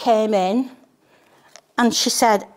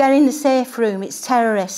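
ordinary talk, nothing marked

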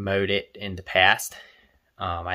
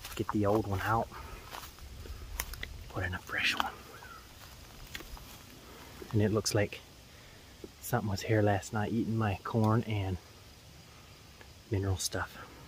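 speaking very softly and quietly; 10 dB quieter than usual. Working on a trail in the woods, avoiding human voice: talking really quietly. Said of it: "I'm trying to talk really quiet".

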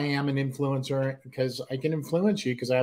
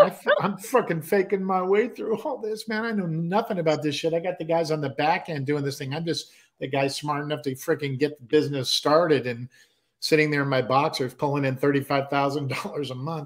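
ordinary delivery

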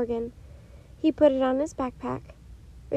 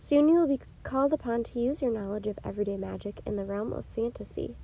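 plain reading voice

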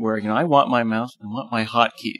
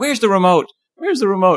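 put-on old man voice, much higher and louder; 8 semitones higher, 5 dB louder than usual. Imitating a four-year-old looking for the remote, little old man voice. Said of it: "He sounds like a little old man".

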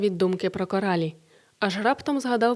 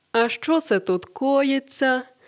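smug, malicious, slow, gloating taunting tone; 4 semitones higher than usual. Reading a story, a voice from above interrupts two people; gloating voice. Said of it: "почувся над ними зловтішний голос Борислава".

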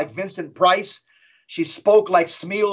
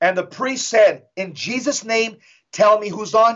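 usual speaking voice

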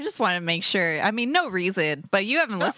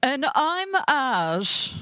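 hammed-up, exaggerated butler voice with drawn-out word; 6 semitones higher than usual. Redoing his intro after being told to up it: upped butler impression. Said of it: "I think you need to up it a little bit".

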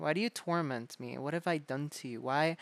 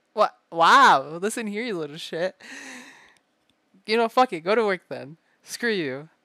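fake angry outburst, loud and fast; 5 semitones higher, 12 dB louder than usual. Speaker in a roleplay telling the listener off, mock-angry outburst. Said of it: "I'm joking".

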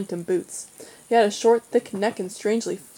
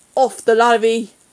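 rage snarling out in a loud, furious snap; 8 dB louder than usual. A boy turns on the group of children, snapping in rage. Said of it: "he snapped".

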